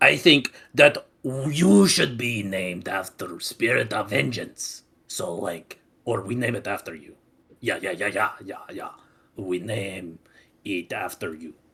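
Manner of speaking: loud, booming put-on monster voice. Role-play game, speaker voicing the Minotaur while naming a spirit: Minotaur voice. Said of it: "after I start talking is actually when I start doing the Minotaur voice".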